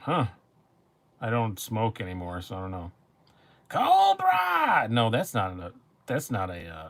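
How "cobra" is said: very high, very loud shrill cry. Reading viewer messages and shouting a line: Cobra Commander voice. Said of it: "My Cobra Commander".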